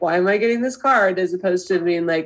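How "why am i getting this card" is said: mock judgmental voice. Acting out own past reaction to a card: imitating own judgmental tone. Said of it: "I sound very judgmental".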